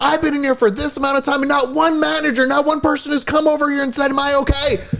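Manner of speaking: put-on, very high-pitched, furious screaming. Retelling how a companion screamed in a store: imitating Chris screaming. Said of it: "he now screaming".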